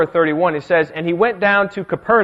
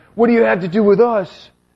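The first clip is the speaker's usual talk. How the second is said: sudden, erupting demon voice outburst; 4 semitones higher than usual. Retelling how a man interrupts Jesus in the synagogue, in a demon voice. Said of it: "I should work on my demon voice".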